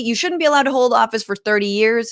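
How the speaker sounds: ordinary talk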